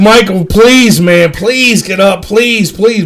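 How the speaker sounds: desperate, repeated, pleading voice. Retelling begging a drunk friend to get up: imitating pleading. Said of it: "I'm like".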